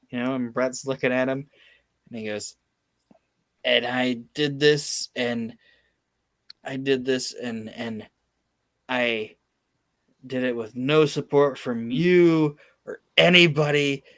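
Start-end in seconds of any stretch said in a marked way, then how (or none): none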